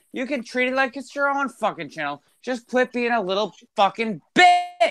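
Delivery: full-on, high-pitched yelling shout. Telling a person who quit the channel to come back, shouting. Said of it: "don't shout".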